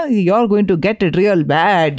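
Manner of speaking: put-on slow, unhurried Indian accent. Recalling a Canadian comedian's line for the other speaker, imitate Russell Peters doing an Indian accent. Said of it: "That Indian accent".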